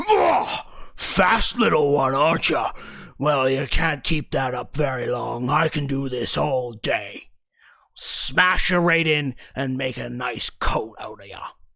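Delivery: big fantasy monster character voice. Game master voices a bugbear after a player dodges its swing: bugbear monster voice. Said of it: "and he goes".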